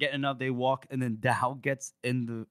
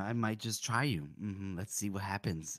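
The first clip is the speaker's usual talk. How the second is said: put-on menacing villain voice, lower and quieter; 5 semitones lower, 6 dB quieter than usual. Retelling a tense book scene in character: imitating Dow, mock menacing. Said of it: "like, all menacing".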